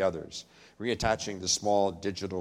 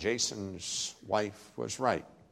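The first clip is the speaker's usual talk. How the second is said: plain reading voice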